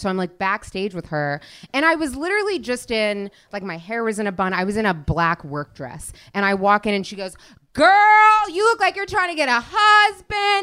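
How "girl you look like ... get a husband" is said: shrill yell, pitched very high and loud. Backstage, retelling what a woman yelled at her, retelling a yell. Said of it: "why is she yelling at me?".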